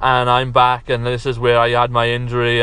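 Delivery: flat monotone delivery. Reviewing a wrestler's promo, the speaker mimics him: TK Orion monotone impression. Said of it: "he was talking like this".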